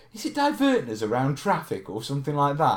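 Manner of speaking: ordinary delivery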